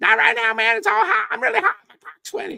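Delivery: very high, shrill, loud voice. Repeating what a man said when asked for a few minutes: Dave Parker in high voice. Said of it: "Real high voice".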